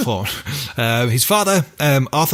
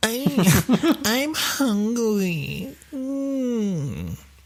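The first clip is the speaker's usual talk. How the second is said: put-on very high baby talk with drawn-out mm; 10 semitones higher, 4 dB quieter than usual. Showing how a baby talks, in a baby talk voice. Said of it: "What does a baby talk like?".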